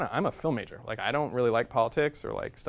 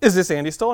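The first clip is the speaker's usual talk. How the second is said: very loud, high, eager, enthusiastic voice; 6 semitones higher, 8 dB louder than usual. Retelling a phone call from a woman: imitating a very enthusiastic woman. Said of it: "a very enthusiastic woman who says".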